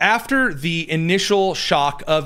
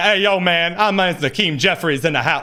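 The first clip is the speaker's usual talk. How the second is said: put-on mocking tough-guy voice. Mocking someone who suddenly starts acting tough: mocking Hakeem Jeffries tough-guy act. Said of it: "start like getting all tough".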